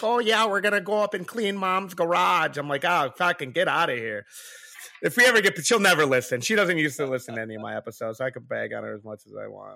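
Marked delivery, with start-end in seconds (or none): 0.0-2.6 put-on terrible Michigan accent. Joking on their show about the wife they left behind; mimicking wife's Michigan accent. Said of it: "My wife's got that terrible Michigan accent".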